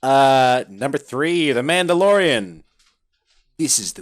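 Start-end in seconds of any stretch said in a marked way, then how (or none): 3.6-4.0 silly, goofy put-on internet meme-character voice. Reading out a show's tagline: Ugandan Knuckles voice. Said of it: "Ugandan Knuckles".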